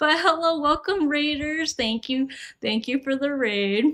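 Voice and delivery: out of breath, panting. A streamer greeting incoming raiders on stream, out of breath. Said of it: "Out of breath".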